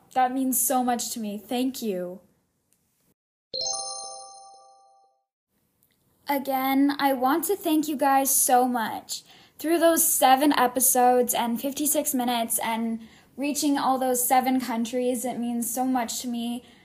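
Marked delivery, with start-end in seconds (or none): 0.1-9.2 speaking while holding back tears. Thanking fans of the number 1 podcast, trying not to cry. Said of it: "I'm trying not to cry right now".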